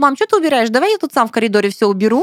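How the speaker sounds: put-on high-pitched, fussing, flustered kid voice. Retelling how the son fussed when caught: imitating a flustered child. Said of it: "а Миша такой засуетил, засуетил".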